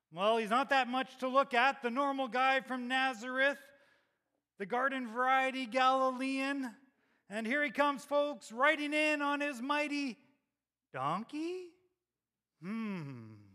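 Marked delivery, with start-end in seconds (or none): 0.2-11.7 put-on ring announcer voice, higher and louder. Imagining Peter announcing Jesus coming in: Peter's announcer voice. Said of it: "announcing with his announcer voice".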